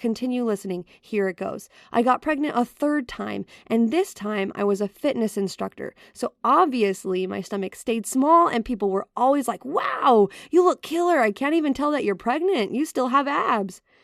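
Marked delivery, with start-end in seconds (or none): 9.6-13.8 put-on sarcastic, insincere tone, pitched up. Quoting people praising a pregnant fitness instructor's body: put-on sarcastic tone. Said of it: "Did you hear the sarcasm in my voice?".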